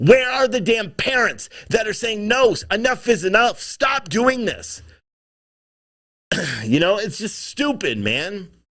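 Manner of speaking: exasperated, frustrated, fed-up rant. A speaker venting to a listener about what is going on, in a frustrated voice. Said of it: "just frustration in my voice".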